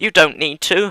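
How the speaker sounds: high, loud, exasperated yell.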